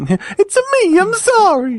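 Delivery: very high cartoon voice with swooping pitch. Joking about how Nintendo apologized over Amiibos, speak in a Mario voice. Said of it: "In Mario's voice".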